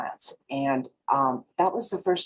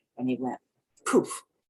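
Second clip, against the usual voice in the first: ordinary delivery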